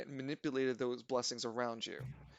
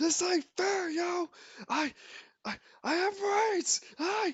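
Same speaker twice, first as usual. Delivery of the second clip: very high, shrill, loud screaming; 7 dB louder than usual. A game master voicing a character for the players, screaming. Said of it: "Murdoch screams".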